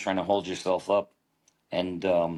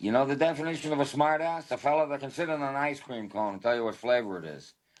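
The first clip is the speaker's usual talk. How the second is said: put-on old-time vaudeville comic voice, pitched up high; 6 semitones higher than usual. Imitating an old comic telling his joke: George Jessel impression. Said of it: "And he would say".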